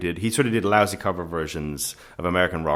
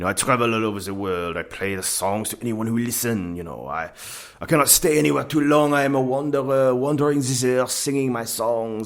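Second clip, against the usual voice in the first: put-on thick, heavy French accent, pitched up throughout; 6 semitones higher than usual. Retelling what a guitar player said when asked about himself: imitating a heavy french accent. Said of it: "very heavy French accent".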